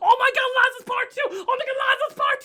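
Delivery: acted very high, giddy, frantic excited yelling. Retelling walking around a convention after a trailer: imitating own wild excitement. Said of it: "I was going insane".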